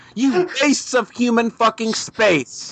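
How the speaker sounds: mock disgusted rant, slow and high-pitched.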